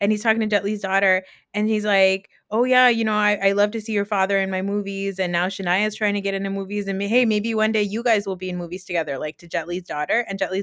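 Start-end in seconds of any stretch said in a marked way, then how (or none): none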